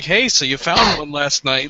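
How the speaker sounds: sarcastic, mocking, half-laughing tone. In a role-play, one character speaks to another, sarcastic, laughing. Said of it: "meant to be sarcastic".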